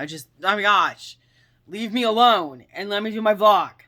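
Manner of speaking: very loud, shrill, fed-up, frustrated outburst. Vlogging behind a locked bedroom door, warning viewers they must take this anger: frustrated. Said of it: "I am feeling so frustrated right now".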